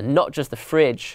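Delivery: ordinary delivery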